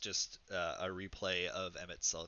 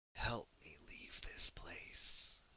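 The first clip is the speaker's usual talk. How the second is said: raspy, primal feminine voice; 3 semitones higher than usual. Narrator voices a voice a player hears in their head: primal, raspy feminine voice. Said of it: "a like a primal, raspy, fe- feminine voice in your head".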